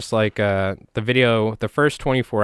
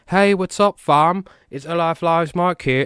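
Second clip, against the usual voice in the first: put-on British accent, high and slow; 8 semitones higher than usual. Mocking a long-winded tutorial intro: british accent. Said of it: "I don't know why I'm doing British accent".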